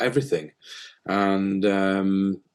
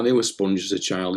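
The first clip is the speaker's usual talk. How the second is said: ordinary talk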